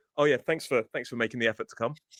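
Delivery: sarcastic, mock-grateful tone. Showing what he'd say to someone who arrives late, sarcastic. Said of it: "Something sarcastic to let them know that I'm annoyed".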